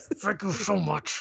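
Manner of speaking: angry gravelly outburst. Talking about how Kingpin gets mad at the littlest thing, do a mad Kingpin impression. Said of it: "why are you so mad?".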